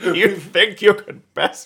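very high, very loud, slow belted drawl. Doing a movie actor impression after a Congo reference: Tim Curry impression. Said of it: "That was a great Tim Curry".

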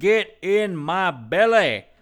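slow drawn-out high voice. Retelling hearing someone quote a movie line: Austin Powers voice. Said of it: "doing an Austin Powers voice".

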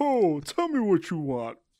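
high voice, strained as if holding in a burp.

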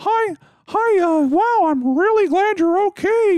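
very high, slow squeaky mouse voice, drawn-out wow. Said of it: "it sounds exactly like Mickey Mouse".

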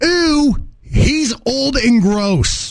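very slow, stretched-out, high drawn-out screech. Telling a story about a drunk friend, acting out a woman's reply, retelling a scream. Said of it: "she screams".

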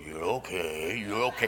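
growled, growly, dominant alpha-dog voice. Soothing a dog by its cage, growl voice. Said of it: "I kind of do it in a growl voice".

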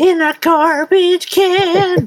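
very high, slow caricature voice, stretched-out "can". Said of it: "but it's more like".

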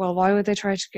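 ordinary delivery

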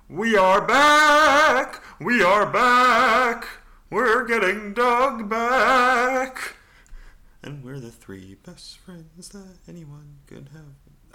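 shrill, booming, belted high call, back drawn out. Opening the podcast by channeling Doug from The Hangover. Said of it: "channel my inner Doug from The Hangover".

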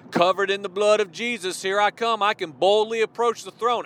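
ordinary talk

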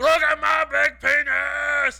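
put-on child-like voice, high, slow, loud, proud yelling.

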